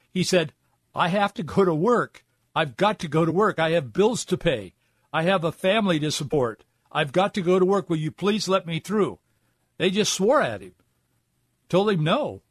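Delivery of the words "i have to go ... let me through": put-on calling-out voice, higher pitch. Retelling a truck driver calling out to people blocking him: imitating someone calling out. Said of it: "he started calling out to these people".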